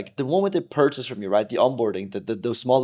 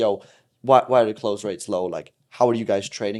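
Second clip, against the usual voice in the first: ordinary talk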